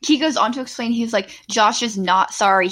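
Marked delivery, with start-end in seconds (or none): 1.5-2.7 put-on snarky delivery. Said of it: "so snarky".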